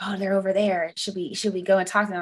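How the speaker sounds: quiet, hushed half-whisper. Retelling how others at a Pride night game talked: imitating people half-whispering.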